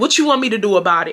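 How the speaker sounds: ordinary delivery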